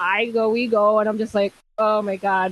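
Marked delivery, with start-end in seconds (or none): 1.8-2.5 mock voice of sudden panic. Retelling going to the venue with dad: imitating own panic.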